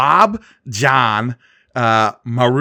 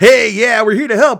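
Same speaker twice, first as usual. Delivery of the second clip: put-on bouncy alien voice, higher and louder; 10 semitones higher, 6 dB louder than usual. Retelling how the aliens come bouncing out of their spaceship: imitating bouncy, eager Zeltrons. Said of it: "they come bouncing out of their spaceship being like".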